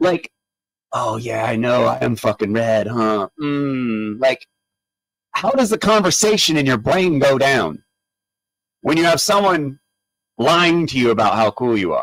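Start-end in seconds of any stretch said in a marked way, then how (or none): 0.9-4.2 mocking, sarcastic, smug self-satisfied tone. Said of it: "have smoke blown up your ass".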